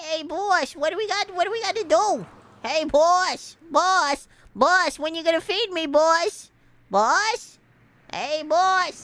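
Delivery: put-on rodent character voice, big fat rat. Voicing a rat character calling for its boss: big fat rat voice. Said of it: "That should be the poi boy voice".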